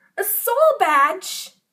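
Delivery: sudden, very loud, high gasp of surprise. Finally remembering what the object in his hand is, gasping in surprise.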